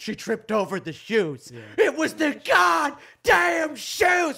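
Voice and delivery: mock hammy overacted reading, very loud, very high, shrill. Retelling how a man overacted his statement, mock-dramatic reading. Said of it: "did this whole dramatic reading of that".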